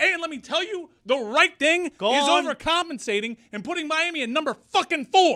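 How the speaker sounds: very high, frenzied, unhinged yelled rant. Telling Jordan to put Miami higher after a win, shouting. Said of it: "while you're shouting at everyone in America".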